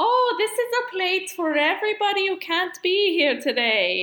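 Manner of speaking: put-on high, butchered Eastern European accent. Retelling a scene, the speaker voices Granny Garbanzo answering Lunette: Granny Garbanzo's Eastern European accent. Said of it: "butchering the Eastern European accent".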